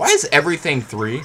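voice breaking high in the middle of the line. Chatting while playing a game, voice breaking. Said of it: "Why did my voice just break?".

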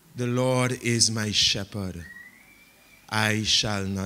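very low, soft, unhurried, word-by-word reading. Showing how people read a psalm in prayer time: slow deliberate reading. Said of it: "very deliberately just read it slowly".

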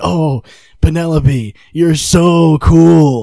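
mock, heavily sarcastic, very loud, very slow gush. Retelling an awkward line a man said to penelope: mock-sarcastic retelling. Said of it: "he said it like so sarcastically".

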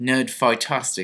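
put-on English accent. Saying a made-up word just for fun: English accent. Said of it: "that's a fun word to say in an English accent".

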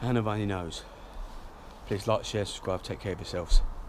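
breathless, winded voice. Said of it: "I'm so out of breath".

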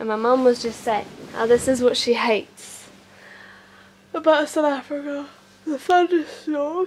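yawning while speaking. Just woke up during a morning thunderstorm, yawning while talking. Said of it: "I'm yawning".

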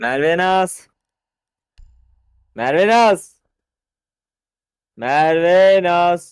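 loud, high-pitched shout, calling out.

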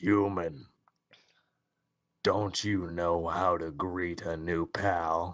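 put-on skeleton character voice. Reading the skeleton's game dialogue aloud: Sans voice. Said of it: "I got his voice".

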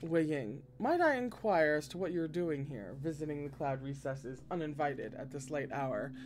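ordinary delivery

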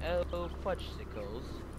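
put-on slow, slight British accent.

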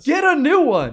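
put-on thick Scandinavian accent, very high, shrill, very loud. Act out the man who pops into the frame in a commercial, IKEA commercial guy, heavy Scandinavian accent. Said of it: "heavy, like, you know, Scandinavian accent".

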